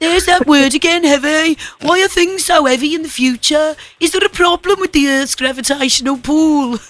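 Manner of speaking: put-on Birmingham accent all the way through. Acting out a film scene, the speaker answers Doc: Brummie accent. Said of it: "put up with the Brummie accent one more time".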